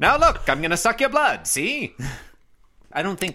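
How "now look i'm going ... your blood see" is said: high-pitched vampire voice with transatlantic accent. Guessing at Garfield's voice, trying it as transatlantic Dracula. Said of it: "He might just be transatlantic Dracula".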